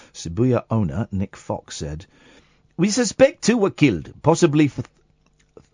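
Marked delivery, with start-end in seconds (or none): 2.8-5.7 put-on South African accent, higher pitched. Reading out a quote from a news story: South African accent. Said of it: "consistent South African accent".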